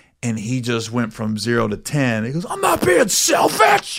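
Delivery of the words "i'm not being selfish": mock very high, shrill, sudden explosive yell. Retelling a green room argument, imitating someone yelling.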